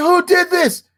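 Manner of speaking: put-on English accent, very high voice. Retelling what a teacher asked the class: imitating a teacher's english accent. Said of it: "He used to talk like he was an Englishman".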